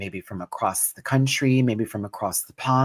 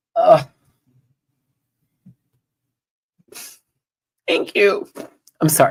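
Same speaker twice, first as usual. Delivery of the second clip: fighting tears, higher and louder; 8 semitones higher, 7 dB louder than usual. Thanking viewers after a surprise message, holding back tears. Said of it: "I'm not gonna cry".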